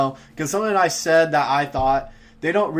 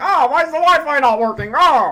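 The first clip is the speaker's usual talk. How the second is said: shrill and loud, pitched way up; 11 semitones higher, 6 dB louder than usual. Imitating people in the building complaining about the Wi-Fi: Jimmy Neutron teacher voice. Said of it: "sound like the, uh, teacher with the big nose from Jimmy Neutron".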